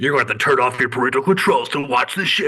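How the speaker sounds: super edgy, dramatic movie-trailer announcer delivery. Describing a show's commercial to others, doing an edgy movie trailer voice. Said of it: "super edgelord movie voice guy".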